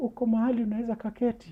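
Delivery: tiny, small, very high-pitched voice. Retelling a phone call from a woman who sells properties: imitating her small voice. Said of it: "that's how she talks with a small voice".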